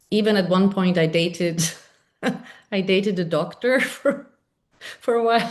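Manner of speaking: talking with words broken up by laughing. Speaker tells a listener about dating a doctor: laughing while talking. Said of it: "I'm just laughing".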